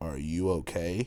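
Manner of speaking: mock wooden, flat, stiff read-off delivery. Retelling asking a girl by the van: imitating own flat line reading. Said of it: "just like a line reading".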